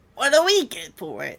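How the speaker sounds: loud, full-on goblin character voice. Galabix answers the Mantid's request for a special item: Galabix goblin voice. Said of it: "I know my goblin voice".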